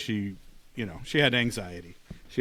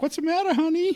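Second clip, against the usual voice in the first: put-on elderly woman voice, very high; 4 dB louder than usual. The speaker quotes a woman in bed reacting to their face: old lady voice. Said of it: "I can't do Ryan's old lady voice".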